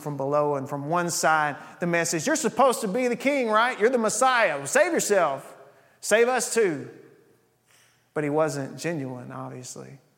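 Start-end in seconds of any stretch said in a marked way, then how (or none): 2.3-6.9 pitched-up, scornful, sneering mocking tone. Retelling a condemned man mocking Jesus, imitating a mocking taunt. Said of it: "He was mocking Jesus".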